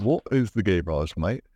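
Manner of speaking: put-on roughly Australian accent. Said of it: "You sound almost Aussie".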